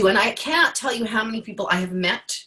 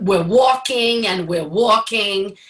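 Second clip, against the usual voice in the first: put-on New York Long Island accent; 4 dB louder than usual. Retelling an audition as a wine tour guide: thick Long Island accent. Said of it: "I had a very thick Long Island accent".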